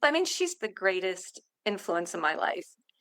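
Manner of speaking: choked-up voice, on the verge of crying. Describing a mother's influence on one's life, starting to cry. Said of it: "now I'm gonna start crying".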